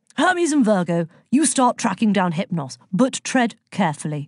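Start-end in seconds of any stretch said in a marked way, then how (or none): none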